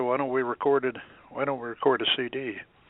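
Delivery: ordinary delivery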